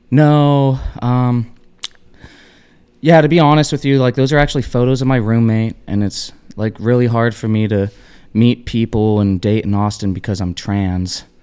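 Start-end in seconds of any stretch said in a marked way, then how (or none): none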